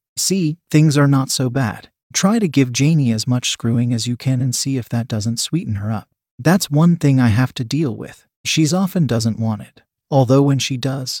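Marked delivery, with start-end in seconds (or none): none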